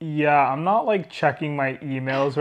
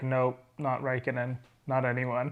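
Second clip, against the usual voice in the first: put-on passive-aggressive sarcasm, lower, much quieter; 3 semitones lower, 9 dB quieter than usual. Retelling Michael Massey's answer: mock passive-aggressive sarcasm. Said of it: "so hilariously passive aggressive sarcasm".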